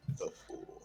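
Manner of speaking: whispered mutter under the breath, as an aside. Voicing a character's aside during a scene: muttered under breath. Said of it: "I'm just gonna say under my breath".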